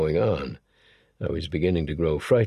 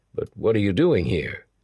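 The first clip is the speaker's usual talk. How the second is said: ordinary delivery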